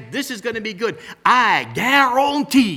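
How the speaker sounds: put-on Cajun accent. Quoting what an old chef of Cajun recipes would say, in Justin Wilson's Cajun accent. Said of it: "he had that Cajun accent".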